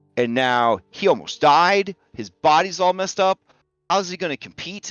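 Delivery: furious, high, climbing, building angry rant. Voicing Leo, who bangs his fist on the table: angry outburst. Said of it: "Leo bangs his fist on the table".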